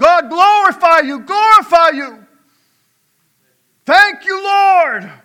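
very loud, high, shrill scream full of gratitude. Speaker acts out the healed man screaming out to God, acting out a grateful scream. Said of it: "he would scream out to God".

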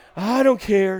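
sweet charming Southern accent. Showing how to answer where to eat, in a sweet southern charming voice. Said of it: "in that sweet, southern, charming voice and go".

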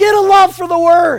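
very loud, high-pitched, preacher-style shout. A preacher urging the listeners, yelling. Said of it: "I'm just yelling because you got to get that".

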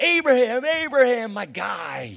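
put-on, booming, loud, high, elated, overjoyed voice. Acting out God calling to a faithful Abraham: imitating an overjoyed greeting. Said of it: "God's heart just leaping out of his chest".

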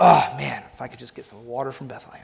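put-on muttering under breath. Acting out a king's wish for water from Bethlehem: imitating David muttering under his breath. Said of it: "almost under his breath".

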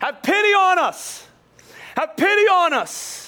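very high, loud, very slow, drawn-out crying out. Acting out lepers calling to Jesus from a distance: loud calling out. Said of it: "they call in a loud voice".

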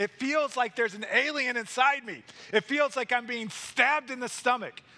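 high-pitched mock yell of pain. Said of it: "he yells out saying".

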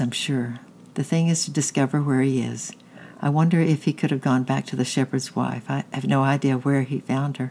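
usual speaking voice

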